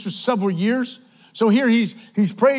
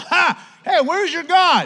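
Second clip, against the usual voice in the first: high, drawn-out, play-acted scornful mocking jeer; 7 semitones higher than usual. Retelling Elijah taunting the prophets of Baal: imitating Elijah mocking. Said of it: "he starts mocking them".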